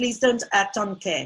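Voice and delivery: ordinary talk, nothing marked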